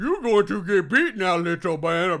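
blunt, loud caveman voice. Retelling a game's tip-off, voicing Claw facing Stan: caveman speak. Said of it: "caveman speak".

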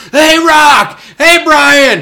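loud high yell.

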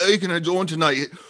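high, bad mock Scottish accent. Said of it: "I'm gonna do a horrible Scottish accent".

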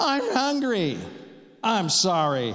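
put-on whining voice. Retelling a Bible story, imitating Esau whining. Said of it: "and he's whining".

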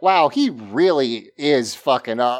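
ordinary talk

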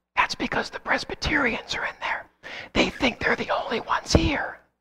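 very quiet, hushed whisper, barely audible. Telling a joke, voicing a character's quiet punchline answer: whispering. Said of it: "he whispers".

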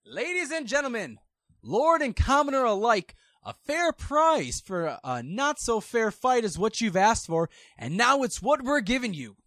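loud booming voice. Voicing a voice addressing lords and commoners before a fight: loud booming voice. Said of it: "a loud booming voice".

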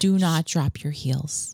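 soothing, gentle but bossy instructor-like voice. Showing how class is led, giving a correction: soothing but bossy instructor voice. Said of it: "in this very soothing way, very bossy".

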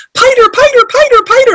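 put-on very high toddler screaming. Parent retells their almost three-year-old son running in, imitating him screaming. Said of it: "he's screaming".

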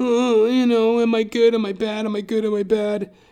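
high, dithering, fretful drama-queen voice. Retelling how a fellow actor doubted himself: mocking drama-queen imitation. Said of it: "That drama queen, that diva".

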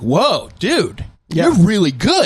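genuinely amazed, very high-pitched, slow, drawn out. Showing how someone genuinely giving a compliment sounds: surprised genuine compliment. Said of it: "they sound surprised".

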